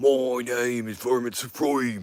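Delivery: booming put-on Australian or British accent. Joking about doing the next album in an accent, trying a put-on Australian accent. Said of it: "it's Australian or some some neighborhood in uh, in the U K".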